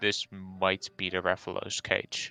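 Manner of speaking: whispering in character. Whispering to John in character about a nearby cage: whispering in character. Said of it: "I turn to John and whisper to him".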